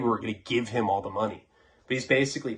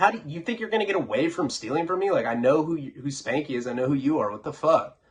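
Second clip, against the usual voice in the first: play-acted, bold, brave, confronting tone; 4 semitones higher than usual. Retelling confronting the kidnappers on the phone: imitating own brave confronting. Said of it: "a little brave or whatever".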